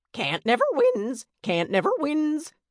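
very high squawking parrot voice, swinging pitch. A narrator reads the bird's line in a story, in Jack's squawking voice. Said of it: "Long-tongued Jack squawked".

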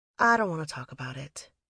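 plain reading voice

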